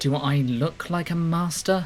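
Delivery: hissed, high-pitched and loud. Questioned about his title, the spymaster hisses his reply. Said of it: "He hisses".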